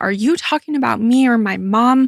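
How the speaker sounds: play-acted angry, in-your-face, confrontational outburst. Retelling a jail story, quoting a man confronting others: imitating an angry outburst. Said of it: "got all mad and in their face".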